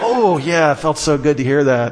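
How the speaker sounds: usual speaking voice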